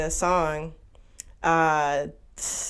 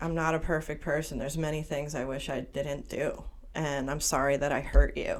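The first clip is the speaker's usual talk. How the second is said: normal talking voice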